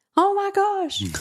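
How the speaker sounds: very high, loud yelled exclamation. Describing a daily devotion routine, retelling a yell. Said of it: "typically I'm yelling".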